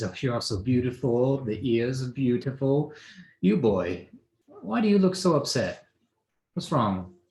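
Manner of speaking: giggly, laughing through the words. Speaker describing a wine-smelling woman greeting the group, imitating her laughing talk. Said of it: "she just laughs and says".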